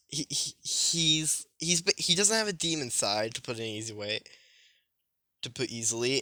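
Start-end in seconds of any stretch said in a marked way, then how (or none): 0.1-3.3 slow, halting stutter, stammering over repeated words. Describing a character who is mostly human, stuttering. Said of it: "I'm stuttering".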